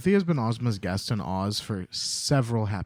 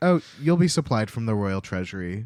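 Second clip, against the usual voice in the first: ordinary talk, nothing marked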